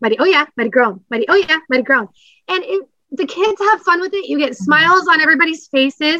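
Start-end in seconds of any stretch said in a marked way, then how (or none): 0.0-2.1 very fast, rapid-fire speech. Showing how to run the quick classroom game: very fast classroom call-outs. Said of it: "very fast mighty oh yeahs and mighty groans".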